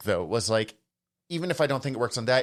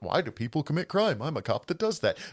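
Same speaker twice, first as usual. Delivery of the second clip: dopey, silly, stupid put-on voice; 3 semitones higher than usual. Discussing a book, the speaker voices its cop character: stupid voice. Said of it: "I'm doing the stupid voice for that".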